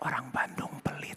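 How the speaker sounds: very soft, hushed, confidential whisper. A speaker shares something personal with the audience, whispering. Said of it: "Aku bisik ya".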